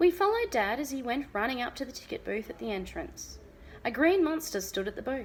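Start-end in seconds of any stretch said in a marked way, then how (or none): none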